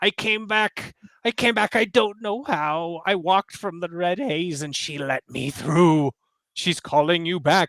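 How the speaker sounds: sobbing, weeping through every word. Narrating a story, voicing a man who came back, in a weeping voice. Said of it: "he starts to weep".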